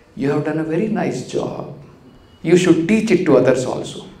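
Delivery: sarcastic, overdone tone meaning the opposite. Retelling how a teacher mocked a devotee who cleaned poorly: imitating sarcastic praise. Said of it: "sarcastically he will say".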